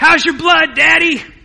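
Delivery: very high, very loud, shrill, raspy top-of-lungs shriek. A father retells his child shouting into dead silence, imitating Clay's raspy scream. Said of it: "at the very top of his clay-like, raspy voice says".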